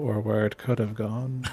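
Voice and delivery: grumbled under the breath, low and soft. Muttering in character after a near-miss shot: muttered under breath. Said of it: "under my breath".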